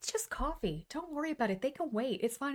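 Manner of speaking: put-on calm, soothing voice. Retelling what a calm woman told the anxious speaker, imitating calm reassurance. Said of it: "She shared her calm with me".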